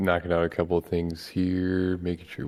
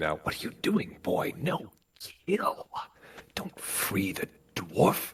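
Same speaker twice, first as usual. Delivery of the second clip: breathy, whispered inner voice; 4 dB quieter than usual. Game master voicing the voice inside a player character's head, whispering. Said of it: "that same voice ... starts whispering".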